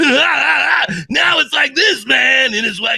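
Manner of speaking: very high, raspy, blown-out, drawn-out voice. Showing the Binky voice with the voice blown out: blown-out Binky voice. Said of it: "just completely blow out your voice".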